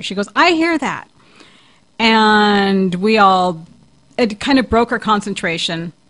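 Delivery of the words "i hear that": acted sudden, high-pitched shouted exclamation. Retelling how a seance guest suddenly spoke up: imitating someone shouting. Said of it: "Excuse me if I'm shouting my voice here".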